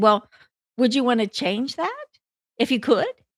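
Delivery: ordinary talk, nothing marked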